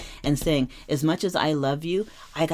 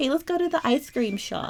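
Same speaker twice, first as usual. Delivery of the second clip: put-on very high, pure, eager, young, earnest voice; 11 semitones higher than usual. Acting out a nineteen fifties style invitation: put-on young, earnest tone. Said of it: "Very young, very earnest, very pure".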